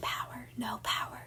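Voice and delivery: barely audible, very quiet, breathy whisper. Describing voices that whisper to you, imitating them in a whisper. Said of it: "they're like whispering to you like this".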